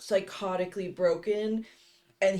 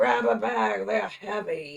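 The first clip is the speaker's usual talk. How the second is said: fake-evil, slow, dragged-out, creaky, sinister voice; 4 dB louder than usual. Mocking how the actress voiced Angela: Angela voice like a kid trying to sound evil. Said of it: "like when a kid is, like, trying to sound evil".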